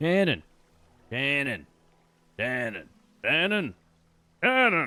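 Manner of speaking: father-like voice. Imitating a friend's father calling for him: imitating Shannon's dad. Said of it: "my best Shannon impression".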